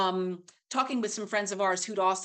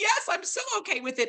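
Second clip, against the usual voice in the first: high, tearful, overwhelmed squeak. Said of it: "And I started crying".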